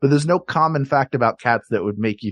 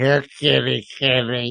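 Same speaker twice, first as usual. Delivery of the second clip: imitated drunk pirate voice. Retelling what a pirate on a theme park ride says: imitating a drunk pirate. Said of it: "because it's this drunk pirate".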